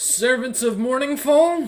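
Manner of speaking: high, thunderous, amplified, booming shout. A player's character shouts at two figures approaching: booming shout. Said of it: "using thaumaturgy to make my voice boom even louder".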